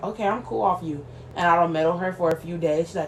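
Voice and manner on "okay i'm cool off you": ordinary delivery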